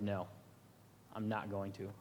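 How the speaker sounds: speaking with conviction. Retelling the disciple Peter refusing Jesus's prediction: imitating someone speaking with conviction. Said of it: "And with such conviction".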